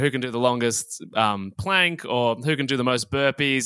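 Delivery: ordinary delivery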